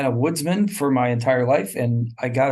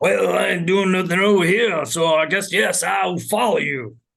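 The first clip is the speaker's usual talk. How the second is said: pitched-up, streetwise tough-guy voice; 6 semitones higher than usual. Voicing the Tin Man in a game: Mister T voice. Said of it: "I'm trying to do a Mister T voice".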